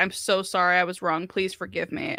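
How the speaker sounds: pretend tearful, groveling, crying voice. Acting out the apology the speaker wants from the other person: mock crying and groveling. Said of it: "I want you crying and groveling".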